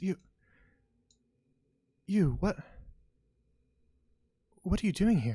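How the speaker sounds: hushed, halting voice, a bit high. Voicing a character who spots the party: hushed voice. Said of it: "in a bit of a hushed voice and says".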